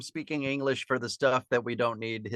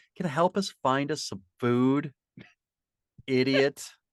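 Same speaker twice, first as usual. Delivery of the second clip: put-on dry, sneering, sarcastic tone. Retelling how a character asked for help: imitating a sarcastic request. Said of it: "how sarcastically she said that".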